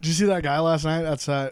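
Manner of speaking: plain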